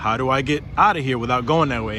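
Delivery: ordinary delivery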